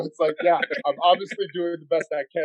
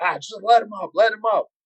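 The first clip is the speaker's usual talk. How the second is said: put-on corner man voice, calling out, yelling; 5 semitones higher than usual. Retelling cornering a fighter on a show, imitating own past yelling. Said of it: "I'm yelling out".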